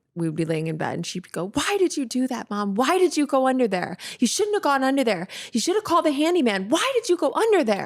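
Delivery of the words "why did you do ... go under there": mocking, angry, high-pitched, repeated child voice. A mother recalls her daughter questioning her at night in bed, imitating Poppy's anger. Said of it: "she would just get angry".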